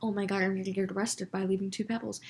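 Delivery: panicked, fearful voice. Retelling own fourth grade reaction: imitating own panic. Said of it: "freaked out".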